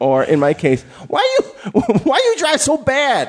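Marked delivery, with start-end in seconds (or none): 1.1-3.3 mock nagging voice, much higher pitch. Trading stories about parents, the speaker does their mother's voice: imitating a nagging mother. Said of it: "That's the voice of my mother".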